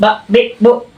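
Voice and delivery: high, jerky, each syllable pushed out hard.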